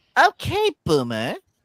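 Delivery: put-on high-pitched Valley Girl accent. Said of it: "Try to do it with the Valley Girl accent".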